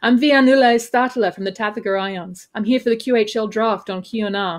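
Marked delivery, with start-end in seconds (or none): none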